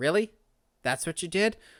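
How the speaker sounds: normal talking voice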